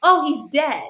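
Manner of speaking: loud, high, excited yell. Retelling how Luke called out while you fumbled with an arrow, imitating someone yelling. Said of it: "he's yelling".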